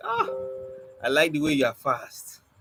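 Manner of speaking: plain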